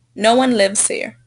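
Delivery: ordinary talk, nothing marked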